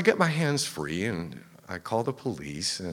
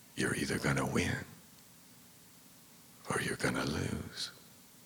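breathy, hushed, soft whisper; 4 semitones lower, 7 dB quieter than usual. Retelling a robbery, quoting the gunman's words in the ear: imitating someone whispering. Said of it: "he whispers in my ear".

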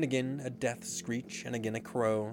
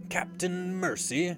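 high, whimpering voice trembling all over; 7 semitones higher, 3 dB louder than usual. Narrating a story, a crewman begs his captain, whimpering and trembling. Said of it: "Starkey whimpered, all of a tremble now".

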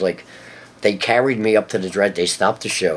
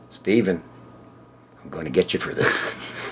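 deadpan delivery, quieter; 3 semitones lower, 5 dB quieter than usual. Retelling what he told Steven in the dressing room, the speaker goes deadpan. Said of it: "just like deadpan".

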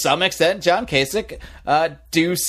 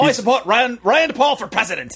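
terrible put-on South African accent, much higher; 7 semitones higher than usual. Speaker tries to quote a South African man, in a bad South African accent. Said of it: "That is terrible".

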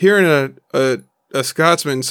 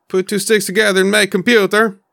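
rough, pitched-up attempt at Norwegian accent; 5 semitones higher than usual. Imagining what you could build in Valheim, in a Norwegian accent. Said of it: "Is that a Norwegian accent?".

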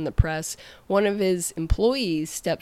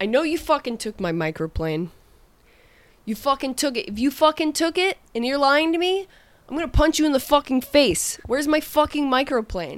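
mock chef voice, high-pitched yelling; 9 semitones higher, 4 dB louder than usual. Retelling how the chef threatened her on the line: imitating the chef yelling. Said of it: "he's in my face yelling at me".

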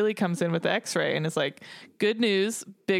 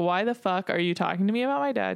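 put-on snippy attitude. Retelling a scene where George turns on Callie: imitating George copping major attitude. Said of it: "starts copping major attitude with Callie".

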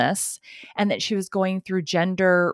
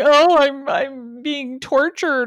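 put-on loud, very slow, drawn-out blubbering ugly crying; 7 semitones higher, 6 dB louder than usual. Mocking a woman's mugshot expression, mock ugly crying. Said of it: "the ugly cry".

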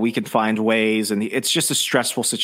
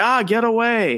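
mock freaked-out outburst, very high and panicked; 12 semitones higher than usual. Retelling a film scene where a man freaks out: imitating someone freaking out. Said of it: "he just backhands her, freaking out".

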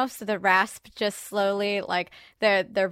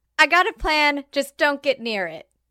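put-on, pitched-up voice calling out; 6 semitones higher than usual. Yelling a plan to the group in a fight: yelling to the group. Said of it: "I'm gonna just yell to the group".

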